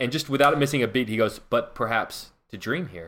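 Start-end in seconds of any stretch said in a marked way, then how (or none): 1.4-3.1 put-on deadpan, dead serious, soft, no pause. Retelling a show joke where a man sleeping in a locker room answers; imitating deadpan delivery. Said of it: "his deadpan instant delivery".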